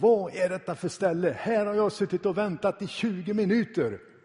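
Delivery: enraged, very loud, high-pitched bellowing shout. Retelling what a man yelled at the reception desk, imitating an angry shout. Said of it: "skrek med hög röst förargat".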